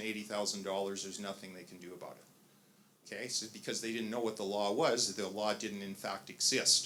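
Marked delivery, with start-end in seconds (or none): none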